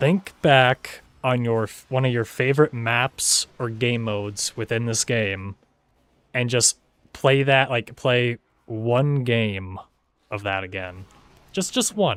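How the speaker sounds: deliberately slowed delivery. After admitting they speak fast, the speaker repeats advice to viewers, speaking slower. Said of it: "I'll say it a little slower".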